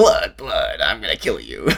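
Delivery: deep, swooping audiobook narrator character voice. Imitating how the audiobook narrator voices the death wind: imitating the audiobook narrator's Mashadar voice. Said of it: "That's really what he sounds like".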